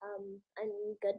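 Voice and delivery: flat, downplayed, very low, hushed monotone. A panelist answering the host's introduction, in a monotone. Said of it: "you're so monotone".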